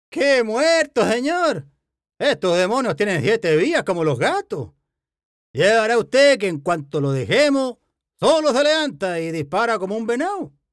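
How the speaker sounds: high, sing-song, teasing and jesting voice. Narrator reads a farmhand answering his boss's ironic question, in a mocking, joking tone. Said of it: "repuso con tono zumbón".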